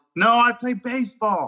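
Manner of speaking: acted-out, high, carrying yell, sounding far off. Retelling a reply to a coach heard from far away: retelling a yell. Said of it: "And I yelled".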